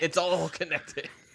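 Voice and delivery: high-pitched, loud, slow ranting delivery.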